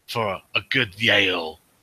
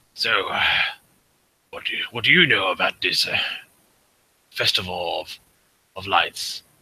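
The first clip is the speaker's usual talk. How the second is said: grumbling orc voice. Asking comrades at the table about the festival: grumbling orc voice. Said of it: "He sort of grumbles a bit in his orcish tone voice".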